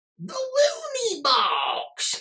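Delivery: very high cartoon clown-villain voice, wildly swinging pitch. Open the Looney Box for the audience with a Mark Hamill's Joker impression. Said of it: "my Mark Hamill impersonation of the Joker".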